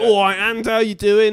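very high, loud, fake Cockney accent. Describing how london gangsters talk, demonstrating a faux cockney accent. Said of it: "Like that faux Cockney".

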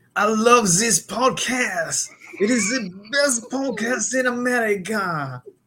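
put-on exaggerated French accent. Ranking accents, showing off number three, a put-on French accent. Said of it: "the frog accent".

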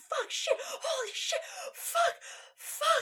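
very high, drawn-out, startled screaming curse. Retelling how a man jumped up at a scary noise, retelling a fright scream.

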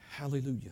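very quiet, low, weak, limp shout. Showing how some people shout to the Lord: low-volume 'Hallelujah'. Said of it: "here's what some of you do. ... That's not a shout, okay? A shout has a little more volume to it".

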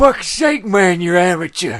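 very loud, very slow, high, bellowed put-on voice. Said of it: "That's quite good".

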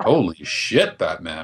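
flat, dry delivery. Speaker shows how a movie character should have delivered a line: deadpan. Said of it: "He should have deadpanned it too".

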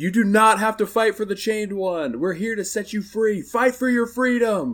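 very high, loud yelled call. Narrating a game scene with goblins, voicing Ted yelling out. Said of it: "Ted actually does yell out".

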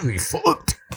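mock Belfast accent, high-pitched shouting.

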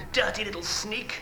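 sneering, hushed hiss, very high. Narrator reads Jennings's words to Harry as he goes to cuff him, hissed. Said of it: "He hissed".

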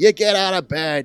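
put-on New York accent. Imitating an actress's sassy mom line in a faux new york accent. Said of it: "faux New York accent".

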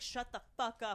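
put-on demon voice. Retelling what a demon said to the group, imitating a demon. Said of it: "a demon was like".

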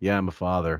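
utterly deadpan, flat, dispassionate monotone. Teasing how Billy sounded when his kid was born, imitating Billy, mock-flat and dispassionate. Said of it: "You couldn't sound more dispassionate. When his kid was born, he probably sounded the exact same".

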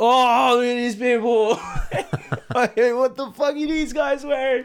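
fake New York accent in a very high voice. Imagining heckling people at an event, in a put-on new york accent. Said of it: "I try to put on a New York accent".

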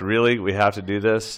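ordinary delivery

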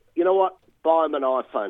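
ordinary talk

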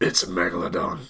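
dramatic action-hero movie trailer delivery. Doing the trailer line when asked for an impression: Jason Statham impression. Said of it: "Can you do an impression of Jason Statham's".

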